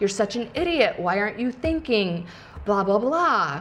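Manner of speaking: normal talking voice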